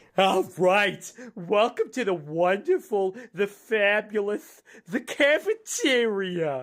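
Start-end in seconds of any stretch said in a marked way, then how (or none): 1.4-6.7 very cheerful character voice. Performing the Mo greeting in character: Mo character voice, very cheerful. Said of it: "he's in an awfully good mood".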